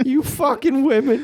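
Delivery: very high pitch with sharp jabbing stress. Doing an impression for the other speaker: Bill Burr impression. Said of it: "You're nailing the Bill Burr impression".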